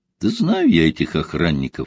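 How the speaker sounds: ordinary delivery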